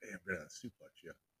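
put-on whisper. Voicing what one wrestler says in the other's ear: imitating a whisper. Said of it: "there he whispers in his ear".

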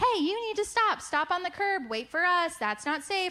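mock call, pitched high but kept mild. Retelling how she yelled at the child running toward the parking lot: retelling a mom yelling. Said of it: "starts yelling like".

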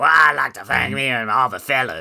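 put-on loud, drawled New Orleans Cajun accent. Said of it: "he was like New Orleans Cajun accent".

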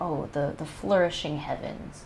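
ordinary delivery

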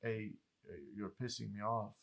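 soft, calm and firm tone. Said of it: "But you stay calm".

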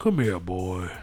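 very low, soft, hushed character voice. Comparing game characters, the speaker quotes one: Arthur Morgan impression. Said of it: "Arthur Morgan goes".

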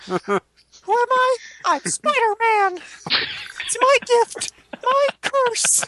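very high-pitched, drawn-out delivery. Playing Spider-Man introducing himself: Spider-Man as Mickey Mouse voice. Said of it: "Spider-Man is Mickey Mouse for some reason".

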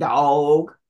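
Southern drawl stretching "dog" over several syllables. Showing how some people in the South say the word: Southern drawn-out "dog". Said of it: "If you really pronounce the word right, it's at least a four syllable word. It has at least five or six O's in it".

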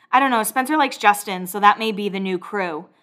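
ordinary talk

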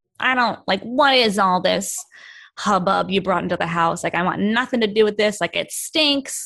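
woman voice impression.

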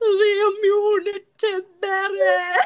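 very high, shrill, loud tiny monster voice. Showing off an impression the speaker says they are good at, Barbie Fairytopia little monster voice. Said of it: "I am really good at that one".

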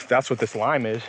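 ordinary talk

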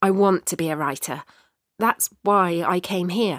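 ordinary delivery

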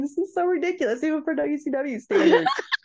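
words breaking up with laughter throughout. Recapping a ridiculous WCW match ending, laughing while talking. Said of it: "Sorry, I can't stop laughing".

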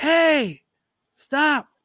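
mock, very high, sudden barked yell. Retelling sneaking into a stadium past security: imitating a guard yelling. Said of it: "the security guard yells".

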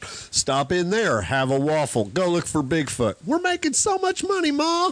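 put-on sing-song Wisconsin accent. Play someone talking to Ma, in a put-on Wisconsin accent. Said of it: "I'm doing my Wisconsin accent".

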